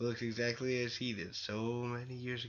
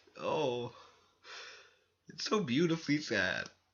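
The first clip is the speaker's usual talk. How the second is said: crying, choked-up, tearful voice; 4 dB louder than usual. After reading a sad story's ending aloud, a speaker reacts, crying, choked up. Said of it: "I'm crying just because it's so sad".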